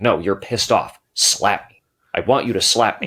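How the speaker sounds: put-on stern, insistent voice. Retelling the director giving the actress a note, mock-stern director. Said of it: "he just gets really stern".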